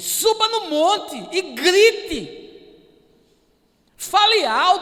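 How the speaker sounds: high, loud, slow, commanding voice.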